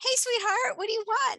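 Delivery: very high, loud, bouncy, peppy, gum-snapping waitress chirp. Retelling a waitress taking a child's order: imitating a peppy waitress. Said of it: "she's snapping her gum, she's got a little pep in her step".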